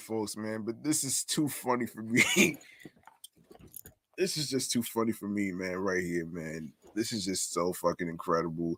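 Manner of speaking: words broken up by laughing throughout. Reacting to a funny story being read out, laughing while talking. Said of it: "I'm sorry for laughing".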